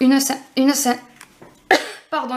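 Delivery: tongue trips over the word, then a stumbling restart. Addressing listeners while trying to say the word for a summary, stumbling over words. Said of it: "je bafouille".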